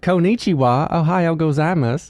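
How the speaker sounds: put-on Southern-accented Japanese. Retelling how high school Japanese sounded: Japanese with a Southern accent. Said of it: "my Japanese had a little bit of a Southern accent".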